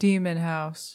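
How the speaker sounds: mock dramatic paranormal-show voice. Saying the show title when asked to say it like Zach Bagans. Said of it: "Say it like Zach Bagel".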